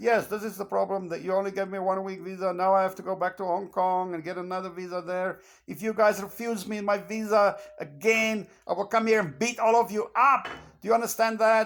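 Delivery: acted, aggressive, livid, threatening, furious tirade. Retelling a confrontation at a visa office: imitating his own furious speech. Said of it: "And I was furious".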